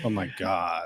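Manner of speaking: low, fake put-on American accent. Chatting about accents with a co-host, trying a put-on American accent. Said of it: "That's my American accent".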